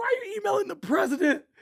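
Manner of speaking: very high-pitched, irritated, pissed-off tone. Retelling someone's reaction to his emails, imitating someone pissed off. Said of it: "He would get pissed".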